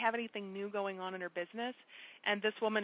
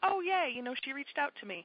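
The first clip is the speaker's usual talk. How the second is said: play-acted, giddy, thrilled, high, swooping gushing excitement; 6 semitones higher than usual. Retelling a woman's reaction to a personal Facebook message; acting out her excitement. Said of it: "she was all excited".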